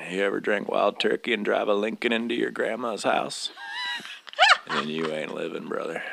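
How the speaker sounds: swooping, sing-song celebrity voice, wide pitch swings. Playing an old guy hanging out at Action Park: Matthew McConaughey impression. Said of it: "That was a perfect Matthew McConaughey".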